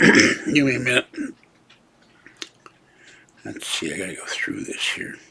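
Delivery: voice giving out. Scrolling through pictures to show listeners, voice giving out. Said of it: "My voice is going again".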